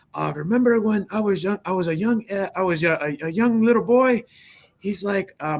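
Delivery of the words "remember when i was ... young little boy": put-on high, full-on Mexican accent. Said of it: "he had the full on accent".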